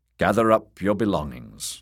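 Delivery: plain reading voice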